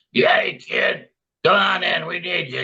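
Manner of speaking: put-on old Italian mobster voice. Retelling how Manny Green called him in, in Manny Green's old Italian mobster voice. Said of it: "it was like an old Italian mobster, you know, that voice".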